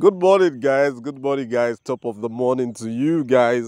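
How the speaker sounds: speaking through bubbling laughter. Greeting viewers at the start of a video, laughing while talking. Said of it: "you can hear that I am laughing".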